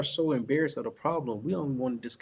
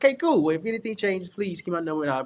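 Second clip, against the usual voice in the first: put-on eager, overexcited, kid-like voice; 5 semitones higher, 4 dB louder than usual. Retelling how he answered a homeowner: imitating his own overexcited phone voice. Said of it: "Bro, you sound like a kid".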